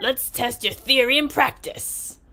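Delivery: put-on New York Bronx accent. Voicing one of the Vikings in the game, in a Bronx accent. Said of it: "our Vikings are from like the Bronx".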